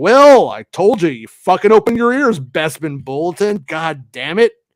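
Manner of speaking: playacted fake angry rant, cursing for show. Telling off someone who doubted the films would arrive: mock angry. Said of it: "Jason's the angry one today".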